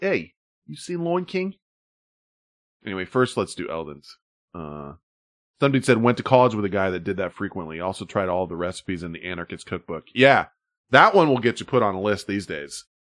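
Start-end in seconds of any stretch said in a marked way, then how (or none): 0.0-1.5 put-on soft, pitched-up Boston accent. Repeating the question after a listener says it sounds boston, in a boston accent. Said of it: "That sounds like the Boston".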